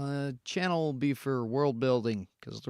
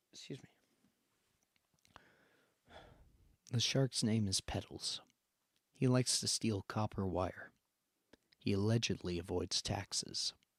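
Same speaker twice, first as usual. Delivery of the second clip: softest possible breathy whisper; 5 semitones lower, 9 dB quieter than usual. Saying lines on request in the softest voice possible: softest voice possible. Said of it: "In the softest voice you can".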